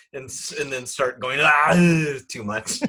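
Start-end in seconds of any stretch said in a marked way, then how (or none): 1.4-2.8 put-on German accent, laid on heavily. Showing how an impression would start: Hitler impression. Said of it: "I would start with Hitler".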